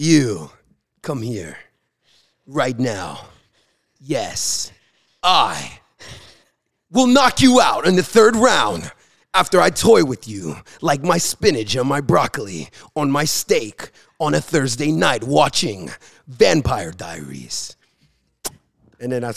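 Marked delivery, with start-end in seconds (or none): 0.0-17.8 slow, swooping, drawn-out grand villain voice. Imitating a boxer threatening an opponent: Austin McBroom impression, supervillain narrator. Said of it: "he's like the narrator of a supervillain movie".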